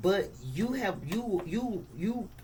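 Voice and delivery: stumbling, stammered repeats of the word "you". A tarot reader giving a reading to viewers, stuttering. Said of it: "I'm stuttering it".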